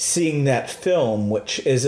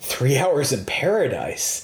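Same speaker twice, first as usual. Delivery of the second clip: slow, scoffing tone. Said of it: "and he scoffed".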